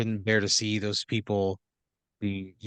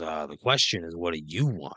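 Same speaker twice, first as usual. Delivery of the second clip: put-on, tough-talking movie-mobster italian gangster voice; 4 semitones lower than usual. Voicing a gasoline genie who appears like an Italian gangster: Italian gangster genie. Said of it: "looks just like a classic from Central Casting, like, Italian gangster".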